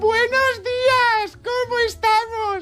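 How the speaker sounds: very high, slow, sugary, over-cheery sing-song shout.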